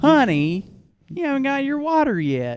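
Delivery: very high, swooping Southern hostess voice. Repeating the waitress's line to the others: imitating a Southern hospitality woman. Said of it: "that's like a Southern hospitality woman".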